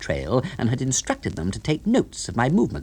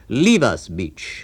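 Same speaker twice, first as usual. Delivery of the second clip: solemn, grave, low and deep voice; 4 dB louder than usual. Reading a novel aloud, a character sends the butler away: grave, deep voice. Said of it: "in a grave, deep voice".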